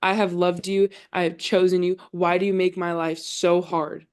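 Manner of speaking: mock-angry, complaining outburst. Retelling a man's words to Jesus, imitating an angry outburst. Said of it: "He is so angry with Jesus".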